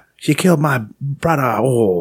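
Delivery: put-on high Chinese accent. Retelling a news story about a killing, voicing Kim Jong-un's reaction: Kim Jong-un impression. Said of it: "Pretty good Chinese accent".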